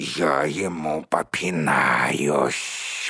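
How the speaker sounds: very low, furious, angry hissing. Narrating an angry spider's reply to the other spiders, hissing angrily. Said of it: "прошипел разгневанный паук".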